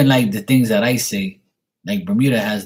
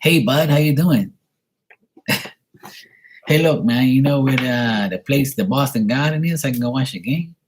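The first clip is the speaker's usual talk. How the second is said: put-on local American accent; 4 semitones higher than usual. Retelling how he switched his speech for a man who couldn't understand him: talking like the locals. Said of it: "I gotta talk different out here".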